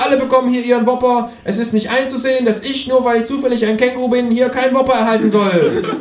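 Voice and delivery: high, indignant kangaroo character voice.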